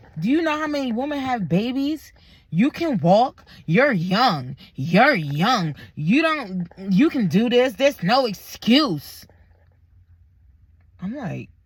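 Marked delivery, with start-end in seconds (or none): 0.2-9.3 put-on mad, angry voice, higher. Retelling a nurse who got mad and ordered walking: imitating an angry nurse. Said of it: "she got mad at me".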